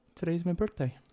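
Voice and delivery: close, hushed, secretive, confidential half-whisper. Playing a character leaning close to a companion: half-whispering in character. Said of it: "pretty much whispers".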